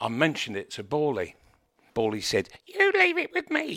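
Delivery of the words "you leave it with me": small, very high-pitched, piping little voice. Retelling Bawley's reply after the speaker mentioned it to him, imitating Bawley's high-pitched voice. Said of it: "In his little high-pitched voice".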